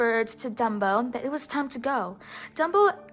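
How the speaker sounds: plain reading voice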